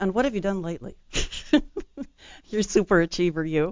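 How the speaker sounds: playfully teasing, joking tone. Speaking to an author who just listed her books, teasing. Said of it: "I was teasing you".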